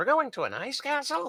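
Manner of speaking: very excited, very high and loud. A player repeats news about an ice castle to the group, very excited. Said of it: "in a very excited tone".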